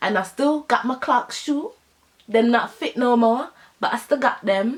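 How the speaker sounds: suddenly slipping into a Jamaican accent. Finishing a story about a friend who used to steal from them: Jamaican accent. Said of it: "I don't know why I'm doing a Jamaican accent".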